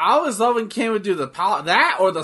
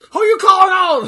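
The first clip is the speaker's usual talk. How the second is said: very high, very loud, shrill chihuahua-style yapping yell; 14 semitones higher, 8 dB louder than usual. Acting out a ringside argument with a fan, imitating Ric Flair yelling like a chihuahua. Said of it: "yelling at you like a fucking chihuahua".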